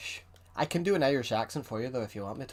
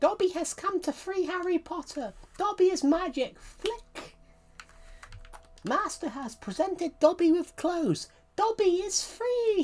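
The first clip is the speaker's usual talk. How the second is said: very high, top-of-range, slow, drawn-out voice; 3 dB louder than usual. Greeting viewers, then doing a high-pitched Dobby voice. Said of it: "the highest sound sounded like Dobby".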